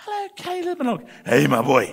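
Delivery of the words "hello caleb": mock very high, soft, gentle, lovely voice. Speaker retells everyone greeting them by name: retelling a lovely gentle voice. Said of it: "this lovely, gentle voice saying".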